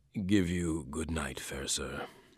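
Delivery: low, drowsy murmur, nearly asleep. Narrator reading a man's words as the narrator leaves his door, sleepy murmur. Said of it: "I heard him murmur sleepily".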